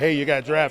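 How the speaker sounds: ordinary talk, nothing marked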